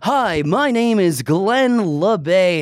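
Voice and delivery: slow, high, very drawn-out put-on radio announcer voice. Acting out introducing himself by name, in a put-on radio voice. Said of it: "I'm going to put on my, my radio voice".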